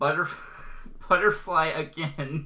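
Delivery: speaking through laughter. Stumbling over a character's name again, laughing while speaking. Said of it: "I laugh too much when I say that".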